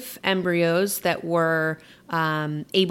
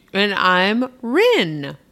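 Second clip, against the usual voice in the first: mumbled through food, mid-chew; 2 semitones higher, 5 dB louder than usual. A co-host giving their name in the show intro: talking with a full mouth. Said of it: "I have a full mouth".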